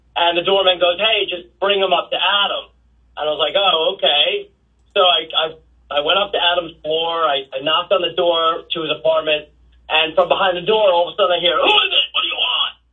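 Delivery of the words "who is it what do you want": mild yell, way up high. Delivering clothes as a PA, the speaker hears a yell from behind the door: imitating Adam Sandler yelling. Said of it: "He was yelling".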